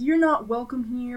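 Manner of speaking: usual speaking voice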